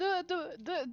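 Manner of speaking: very high, loud sobbing voice.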